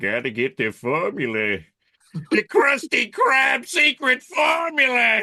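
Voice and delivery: loud, shrill cartoon voice, slow and swooping. Asked about favorite impressions, demonstrating one: Plankton voice. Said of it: "impressions, probably Plankton".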